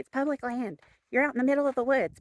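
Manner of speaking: mock scolding at a moderate volume. Recounting a woman who yelled at you the whole way, retelling someone yelling. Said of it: "she yelled at me the whole way".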